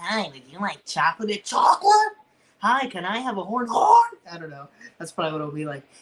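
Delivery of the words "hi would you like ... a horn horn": cartoon voice with wildly swooping, sing-song pitch. Imagining asking at the Altoona shops for parts: SpongeBob chocolate guy voice. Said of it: "the chocolate guy".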